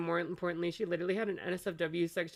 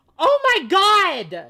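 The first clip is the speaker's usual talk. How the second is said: very loud, very high shriek, god stretched; 18 dB louder than usual. Reacting in shock to leaked messages: yelling. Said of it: "sorry for yelling".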